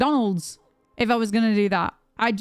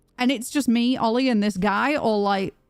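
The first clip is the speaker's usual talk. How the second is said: ordinary talk, nothing marked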